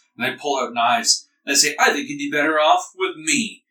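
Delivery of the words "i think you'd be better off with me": put-on boozy, tipsy, drunken voice. Narrating a scene, voicing strangers with knives walking toward you, in a drunken voice. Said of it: "they look over at you drunkenly".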